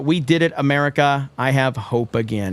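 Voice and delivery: ordinary talk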